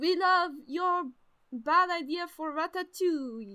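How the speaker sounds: put-on French accent with R's in the throat. Imitating how French people would talk, in a mock French accent. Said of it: "That's how they say it".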